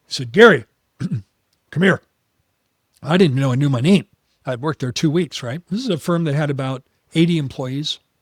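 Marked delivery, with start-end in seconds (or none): 0.3-2.0 booming, raised voice. Telling how a man at the firm called him over: imitating Rick's booming baritone. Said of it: "he had a booming bar- baritone voice".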